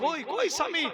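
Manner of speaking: high, loud crying wail.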